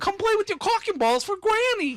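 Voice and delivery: put-on New York accent. Recalling a comedy bit, Adam Sandler voice, somewhat New York accent. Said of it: "somewhat New York accent going on with it".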